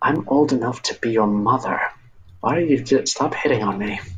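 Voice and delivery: put-on voice of an older woman. Narrating a game scene, the narrator voices a woman heard in the library: older woman voice. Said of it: "the voice of an older woman".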